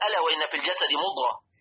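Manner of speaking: ordinary talk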